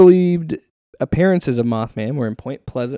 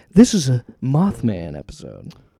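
calm public radio host voice with swooping pitch; 2 semitones lower than usual. Co-host introducing an episode, in an NPR voice. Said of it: "I'm doing my NPR voice".

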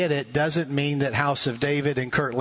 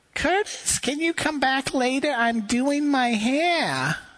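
put-on very high, elderly lady voice; 11 semitones higher than usual. Speaker knocks at a ninety-something woman's door and she answers; imitating an elderly woman. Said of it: "with that same voice, only a little older".

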